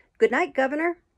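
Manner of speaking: bright, friendly calling out. A rider calls out at a long cab stand, cheery call. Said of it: "my rider called out in a cheery voice".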